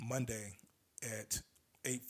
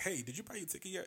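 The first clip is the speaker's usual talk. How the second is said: mock, soft, pushy bill-collector prodding tone; 7 semitones higher, 5 dB quieter than usual. Retelling messages to friends about buying tickets: pushy like a bill collector. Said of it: "I'm like a bill collector now".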